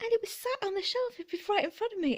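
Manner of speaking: voice going very high in a surprised squeal. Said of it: "did you hear my voice go all high?".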